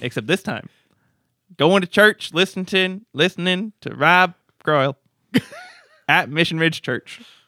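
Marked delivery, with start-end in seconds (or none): 1.6-7.2 sliding into Southern accent, pitched up, loud. Asking listeners to post pictures from church: southern accent. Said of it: "Not sure why it became a Southern accent".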